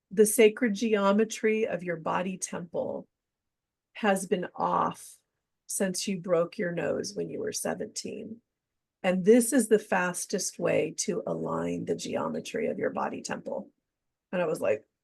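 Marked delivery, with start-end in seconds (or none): none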